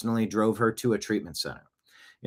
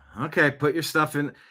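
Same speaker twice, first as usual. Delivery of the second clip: fed-up, annoyed, exasperated sigh, pitched up; 5 semitones higher than usual. Imitating an officer who is annoyed at having to help: imitating an exasperated sigh. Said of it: "an exasperated sigh".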